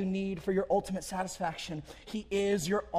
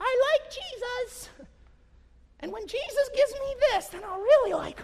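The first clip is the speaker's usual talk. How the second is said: very high, squeaky cartoon voice; 3 dB louder than usual. Voicing what a lying heart says: Mickey Mouse impression. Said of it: "That was my Mickey Mouse impression".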